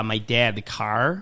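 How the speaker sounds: accent from Buffalo. Answering what the Buffalo accent sounds like: imitating a Buffalo accent. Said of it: "the Buffalo accent is so gross".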